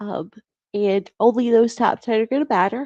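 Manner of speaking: words pulled out of shape by yawning. Explaining how the final list of names will be used, yawning while talking. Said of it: "Sorry, I'm yawning".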